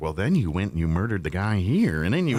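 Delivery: casual, offhand, nonchalant tone. Imitating a show's detective accusing a suspect: nonchalant Elsbeth imitation. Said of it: "she says it so nonchalantly".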